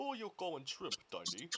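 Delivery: hammed put-on Russian accent, swooping pitch. A player voices a line in an attempted russian accent. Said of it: "That's my attempt at a Russian accent".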